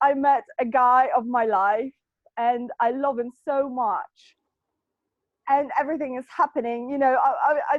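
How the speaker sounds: teary voice catching on words, near tears. Sharing happy personal news with others, about to cry. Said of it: "I'm just gonna cry in a second".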